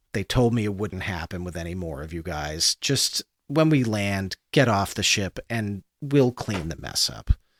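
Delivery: low, soft, weary sighing voice. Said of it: "he sighs and he goes".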